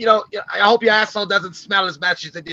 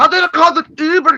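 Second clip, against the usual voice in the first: bad put-on drunken Scottish accent, loud and high; 9 semitones higher, 6 dB louder than usual. Imitating a friend's new character trying to call an Uber: imitating a bad drunk Scottish man. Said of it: "it just sounded like a really bad drunk Scottish man".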